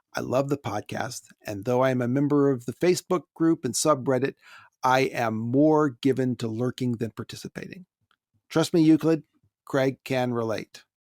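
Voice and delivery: ordinary talk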